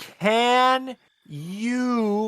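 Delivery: slow loud shouting. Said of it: "very loudly and very slowly just shout".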